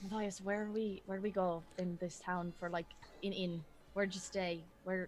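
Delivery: half-whispered, very quiet, barely audible. Speaking in character to Matthias, asking where to stay, half-whispering. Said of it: "I'm like whispering now".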